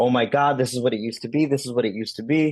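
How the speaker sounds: mock joyful, happy screaming. Retelling a woman driving past with windows down: retelling a woman's happy screaming. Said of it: "She's pretty much screaming like happiness".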